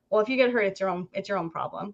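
normal talking voice

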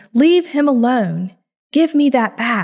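slow, drawn-out, mild yell held in check. Recalling rushing toward someone who grabbed something: retelling a scream. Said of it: "I just started screaming".

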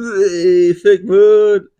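bad, shrill, booming yell, very high, long hey. Picturing meeting figment with a festival beer in hand, the speaker does a bad festival-goer impression. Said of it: "That was the worst impression you've ever done".

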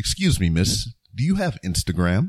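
polite, prim, swooping put-on proper voice. Retelling what they said to the woman at the window, put-on proper voice. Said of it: "I used my proper voice".

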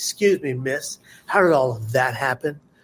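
mock pointed, blunt, judgmental, nosy, prejudiced tone. Speaker acts out strangers questioning their mom, mock prejudiced tone. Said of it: "in a very prejudicial tone".

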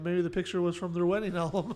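ordinary talk

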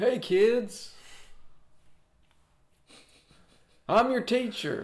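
very high, loud, slow, drawn-out character voice. Joking about a movie casting, doing a Bill Paxton impression. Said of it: "That's my Bill Paxton impression".

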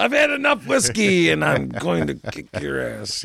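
loud, belted, drunk-sounding put-on Irish accent. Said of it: "listen to the Irish".

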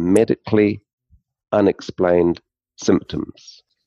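slow, drawn-out, careful and deliberate pace. Naming one of the congress's main topics to another speaker: said slowly. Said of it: "I'll say this slowly".

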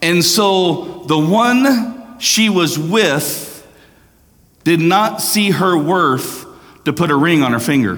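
very slow, deliberate, drawn-out, word-by-word pacing. Telling listeners you'll say this part really slow, very slow. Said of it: "I'm going to say this really slow".

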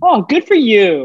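put-on very high, slow, snippy voice. Retelling a reply to someone's news, mimicking her snippy tone. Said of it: "Exactly what her tone was".

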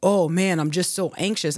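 ordinary talk, nothing marked

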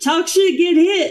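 shrill, loud, high-pitched taunting, challenging yell. Yelling at a creature from a cabin doorway to lure it: in-character yelling.

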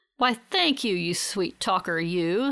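bone-dry, wry tone. Narrator reads a woman answering an enemy's insult: dry. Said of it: "says Fallon dryly".

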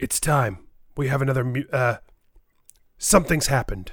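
whispered. Voicing a character who wakes someone at night through a door: whispering through a door. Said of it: "he whispers through the door".

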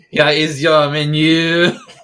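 terrible, bad put-on French waiter accent. Imitating a man dressed as the waiter, speak in a terrible French accent. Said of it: "a terrible French accent".

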